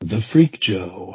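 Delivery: low register put-on voice. Introducing himself on the show: low register put-on voice. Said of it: "low, low register voice".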